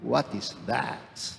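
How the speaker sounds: revolted, turned-off, disgusted tone. Explaining what a Tagalog phrase means, saying it in a disgusted tone. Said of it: "not a tone of curiosity, but a tone of disgust".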